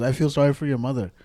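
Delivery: ordinary talk, nothing marked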